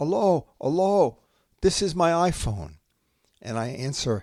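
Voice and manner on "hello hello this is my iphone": put-on high, loud, anxious boy's yelling shout. Retelling how the iPhone's owner answered the call: imitating an anxious boy yelling. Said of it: "an anxious boy yelling".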